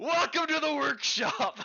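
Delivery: shrieking dragon yell, very high and loud. Voicing a clockwork dragon greeting the party: dragon yelling. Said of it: "And it yells".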